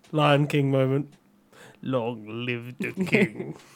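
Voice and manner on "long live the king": low, hushed, very slow, drawn-out villain voice. Joking with friends about a Lion King moment: Scar impression. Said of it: "Is that your Scar impression?".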